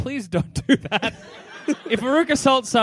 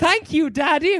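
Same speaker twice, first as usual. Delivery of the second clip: prim and prissy delivery, pitched high; 8 semitones higher than usual. Imagining a scene of a line said prim and prissy. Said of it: "Veruca Salt, all prim and prissy".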